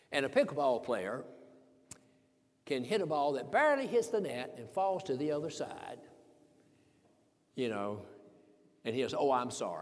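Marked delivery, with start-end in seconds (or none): 9.1-9.8 acted laughing delivery, lower and quieter. Retelling a pickleball player's apology after a net ball: imitating a laughing apology. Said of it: "with a laugh, with a smile".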